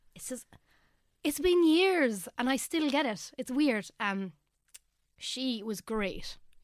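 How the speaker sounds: welling up, high, slow, words drawn out. Talking about a late nan who meant a lot, getting emotional. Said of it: "I get really emotional talking about this".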